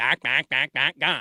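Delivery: loud, quacking, duck-like calling voice. Making fun of a man at an ESPN affiliate, imitating a man sounding like a duck. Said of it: "So he sounded like a duck".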